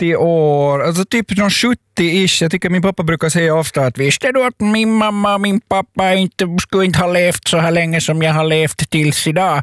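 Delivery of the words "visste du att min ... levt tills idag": put-on slow Swedish spoken with a Finnish accent. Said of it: "imiterar din finskspråkiga pappa så gör du det på svenska med finsk brytning".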